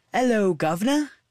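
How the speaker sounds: fake, put-on London Cockney accent. A character who has never been to London greets the others, in a put-on Cockney accent. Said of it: "please never do that accent again".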